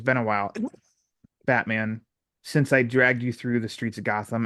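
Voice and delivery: plain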